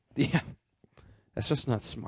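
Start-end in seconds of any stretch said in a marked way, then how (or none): 1.4-2.1 hushed, breathy whisper. Doing an impression of Greg Remsburg. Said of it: "That's my impression of Greg Remsburg".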